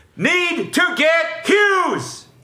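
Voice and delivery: very high, slow, all-caps shout. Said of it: "Sean goes on to write in all caps".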